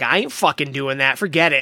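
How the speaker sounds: ordinary delivery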